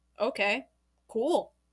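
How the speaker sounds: low, soft, casual, unbothered, flat nonchalant tone. Demonstrating a reply to give bullies, nonchalant. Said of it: "giving them a nonchalant".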